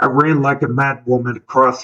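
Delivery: ordinary delivery, nothing marked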